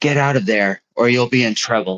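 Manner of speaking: loud theatrical whisper. Narrating a game scene as a wizard statue pops from a hatch: stage whisper. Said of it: "stage whispers".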